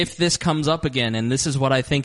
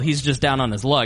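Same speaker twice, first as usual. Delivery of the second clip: usual speaking voice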